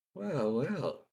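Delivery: amused, sly, swooping sing-song voice. The narrator voices a tall woman greeting the visitors in the bayou, sly and chuckling. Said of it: "And I would say she looks to be the almost 7-foot woman. / And I would say she looks to be the almost 7-foot woman. / "Kind of rude to be asking a lady's name without giving your own, / Yeah, I hope I".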